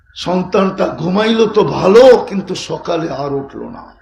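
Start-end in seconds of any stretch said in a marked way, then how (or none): none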